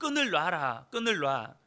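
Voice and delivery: put-on, loud, big startled and alarmed shout. Retelling a father's cry to his young daughter: imitating a loud shout. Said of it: "크게 외친 거죠".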